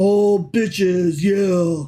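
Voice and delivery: low, dumb-sounding voice. Reprising the old God voice for the other speaker: dumb God voice. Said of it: "He was kind of like a big dum-dum".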